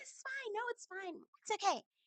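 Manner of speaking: very high, soft, dainty simpering voice. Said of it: "this little dainty voice".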